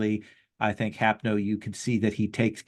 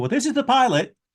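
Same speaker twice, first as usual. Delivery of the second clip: loud raised voice, much higher and faster; 14 semitones higher, 6 dB louder than usual. A game narrator voices a character who keeps his distance, raised voice. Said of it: "probably has to raise his voice and go".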